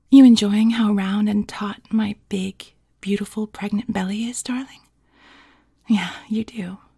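most seductive, alluring voice, laid on thick. Reading out a character's line in a story, in your most seductive voice. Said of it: "in my most seductive voice".

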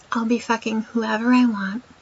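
usual speaking voice

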